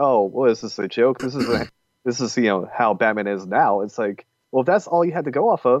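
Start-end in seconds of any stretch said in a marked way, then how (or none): none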